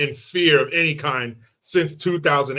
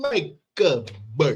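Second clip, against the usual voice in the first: put-on, comic, sing-song Italian accent; 3 dB quieter than usual. Slipping in a joking line, put-on Italian accent. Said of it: "any chance I get to do that Italian accent".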